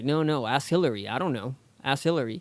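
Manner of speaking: plain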